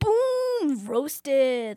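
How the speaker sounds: put-on very high, emphatic, kid-style delivery. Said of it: "But they say it like".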